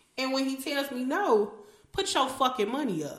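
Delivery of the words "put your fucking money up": mock blunt, in-your-face, confrontational and challenging. Showing what to tell the brother when he says no: confronting tone. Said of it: "I'm just gonna say it just like that".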